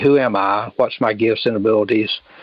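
ordinary delivery

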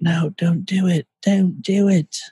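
put-on English accent. Acting out a young mom warning her daughter, in an English accent. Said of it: "Why did you go English on that all of a sudden?".

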